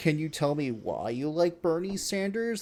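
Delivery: put-on condescending, patronizing, talking-down tone. Retelling how a reporter questioned a girl in a Sailor Moon outfit, mimicking a condescending tone. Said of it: "Like in that really condescending tone".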